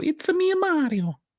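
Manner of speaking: put-on video-game Italian accent, very high, slow. Explaining what doing an italian accent sounds like, the speaker demonstrates: italian accent. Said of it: "an Italian accent when you go".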